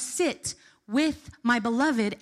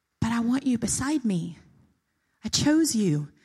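imitated whisper. Speaker talking about bowing retells what he kept whispering, imitating a whisper. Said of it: "And he t- kept whispering".

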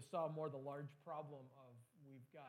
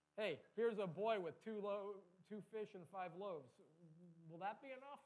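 heavy tongue-in-cheek sarcasm, louder and higher; 6 semitones higher, 5 dB louder than usual. Acting out a disciple's remark about the loaves: imitating a sarcastic tone. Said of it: "I personally sense a whole bunch of sarcasm in there".

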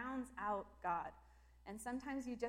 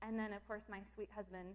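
usual speaking voice

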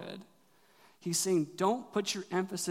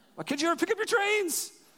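put-on very high, raised, scolding yell; 13 semitones higher, 5 dB louder than usual. Retelling yelling at a child to pick up his toys: imitating own yelling. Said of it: "I'm just yelling at Leon".

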